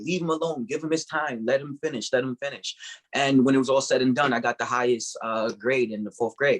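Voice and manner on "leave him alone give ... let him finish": mock insistent, firm and urgent yelling. Retelling how a teacher answered the principal: imitating someone yelling. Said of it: "she yelled at him".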